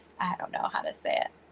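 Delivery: fast, whispered aside under the breath.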